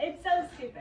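tearful, words pushed out through tears. Being handed a tissue after a sad book: crying while talking. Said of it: "You're all red and crying".

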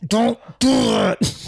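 through clenched teeth. Retelling what the niece's best friend said in a play fight: imitating talking through gritted teeth. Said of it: "she was gritting her teeth and she's like".

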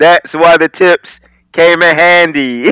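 godlike voice proclaiming as if from the heavens. A speaker chiming into a group story, adding a remark in a God voice. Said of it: "In my God voice".

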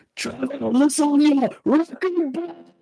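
mock very high-pitched, desperate cry. Recounting a game moment where the injured Gimli cried out, retelling Gimli's desperate shout. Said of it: "Your mic kind of obliterated you shouting".

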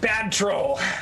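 shouting. Player in a story scene shouting at a troll. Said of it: "I shout".

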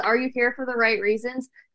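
ordinary talk

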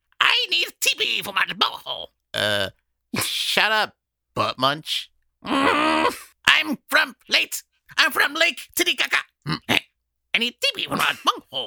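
very high, shrill, shrieking cartoon voice, swooping wildly. Taking a solo turn doing cartoon voices, in a Cornholio voice.

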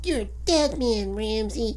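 put-on high-pitched small child's voice. Recalling Suburban Commando, when the Undertaker finally talks: Undertaker in a little kid's voice. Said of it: "he has a little kid's voice".

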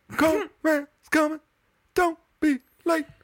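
very high-pitched eerie voice. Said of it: "this, like, really high-pitched voice".

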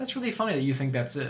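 dry delivery, low pitch, soft volume. Retelling Michael Keaton's reply to her speech: retelling Michael Keaton's deadpan reply. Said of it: "completely deadpan".

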